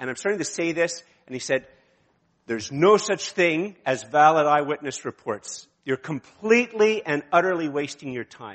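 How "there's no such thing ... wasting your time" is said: heated, loud, raised retort. Retelling what a man in a coffee shop said to him: imitating a raised voice. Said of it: "I just raised my voice for this".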